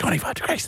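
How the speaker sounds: quiet, low-volume shout. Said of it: "like, low volume".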